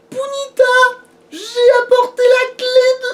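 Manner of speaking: high-pitched put-on character voice. Trying out a game character's line in a high-pitched character voice. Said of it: "je le fais pas aussi aigu que lui".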